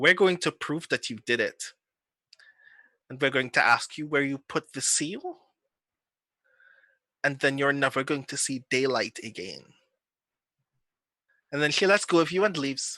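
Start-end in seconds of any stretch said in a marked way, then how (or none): 0.0-9.6 icy, calculating, very stern, cold voice. Voicing an officer threatening a character at a funeral: very stern, cold, calculating voice. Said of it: "very sternly in a, a very cold, calculating voice".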